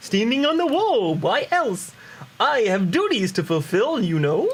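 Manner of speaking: puppet-style character voice. An NPC answering why he is late, in a Muppet voice. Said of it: "they're gonna get a Muppet voice".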